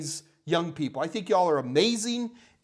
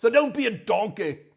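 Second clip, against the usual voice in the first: bad, terrible put-on Scottish accent; 3 semitones higher than usual. Host talking to viewers, putting on a bad Gordon Ramsay Scottish accent. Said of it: "That's my worst Scottish accent I got".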